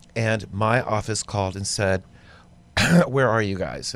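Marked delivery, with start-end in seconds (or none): none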